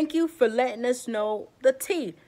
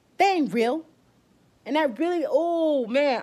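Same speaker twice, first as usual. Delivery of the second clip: angry voice, teary, holding back crying; 3 semitones higher than usual. Venting to viewers who can see his eyes, angry and near tears. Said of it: "I'm so mad right now".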